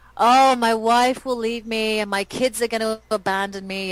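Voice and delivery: play-acted whiny, complaining, self-pitying moan. Voicing a hypothetical client's excuse, mock whining. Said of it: "I'm saying this with the wrong tone of voice".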